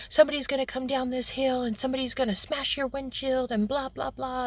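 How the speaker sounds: put-on fast, angry, heated tirade. Retelling a man scolding another driver about the off-roaders, imitating an angry rant. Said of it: "getting all pissed off at him".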